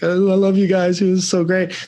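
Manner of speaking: put-on weepy, tearful crying through words. Retelling own words to the team at the season banquet: imitating own crying. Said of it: "so I'm just crying".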